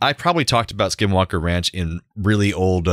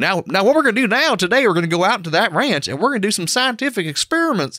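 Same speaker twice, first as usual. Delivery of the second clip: mock, thick Kentucky accent. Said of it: "he's got a thick Kentucky accent".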